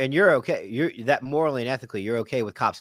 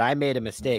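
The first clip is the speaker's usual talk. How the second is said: ordinary talk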